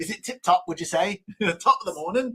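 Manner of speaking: poor put-on British accent. Speaker trying out accents with a friend, bad British accent. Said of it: "You're gonna you're gonna turn into Jamaican".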